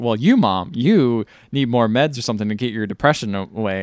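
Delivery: ordinary talk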